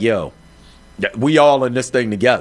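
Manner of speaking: normal talking voice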